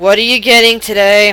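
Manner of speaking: very flat, dreary, dead-level droning monotone. Narrating a scene, voicing a Durgar who serves the group, very monotone. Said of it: "He says in a very monotone voice".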